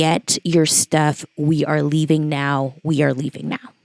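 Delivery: play-acted grave, no-nonsense, dead-serious delivery. Retelling how Dad came in and told them to leave: imitating Dad's serious tone. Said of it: "He looks at us so serious".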